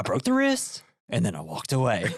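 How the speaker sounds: acted dim tough-guy voice. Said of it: "He talks like this".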